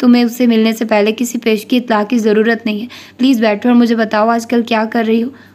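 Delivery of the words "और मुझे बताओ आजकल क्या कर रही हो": ordinary delivery, nothing marked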